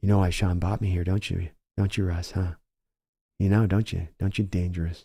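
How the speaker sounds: hushed half-whisper, very close. Acting out a backup taunting the starter: half-whispering in someone's ear. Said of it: "Stop whispering in my ear, dude".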